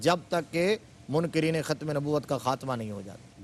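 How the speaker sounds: ordinary delivery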